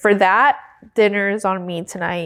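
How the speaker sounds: ordinary delivery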